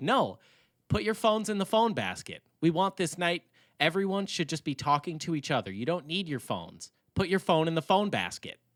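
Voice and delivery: mock-demanding, put-on stern and insistent tone. Acting out what some people said to everyone, mock-demanding, not joking. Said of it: "dema- it's not like a quirky, like, aha, I'm joking".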